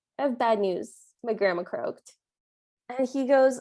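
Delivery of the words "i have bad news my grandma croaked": ordinary delivery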